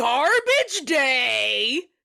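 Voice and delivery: loud, high, crazed voice, "day" drawn out. Retelling a sequel's crazy killer line from a meme: imitating the crazy killer's line. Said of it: "that's literally how he says it".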